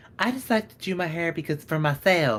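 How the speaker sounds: put-on Southern accent. Imitating what some people say, in a Southern accent. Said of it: "I don't know why I do a Southern accent".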